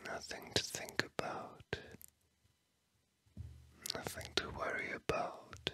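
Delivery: soft, gentle voiceless whisper, slowing down. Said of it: "the last few words that I'm whispering to you".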